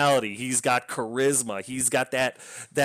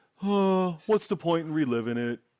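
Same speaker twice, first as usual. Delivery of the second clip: grudging, dismissive, passive-aggressive brush-off; 3 semitones higher than usual. Retelling a husband's replies to his wife's questions: imitating a passive-aggressive husband. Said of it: "he's a passive-aggressive jerk to his wife".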